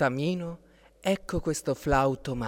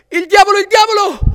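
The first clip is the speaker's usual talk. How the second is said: very loud, very high terrified shriek of fright; 16 dB louder than usual. Narrator reading a story, a giant man startled by a feathered creature: frightened shout. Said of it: "gridò a sua volta l'omone, anche lui spaventato".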